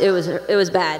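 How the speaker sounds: ordinary delivery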